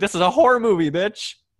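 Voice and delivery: emphatic mock shout, high and loud.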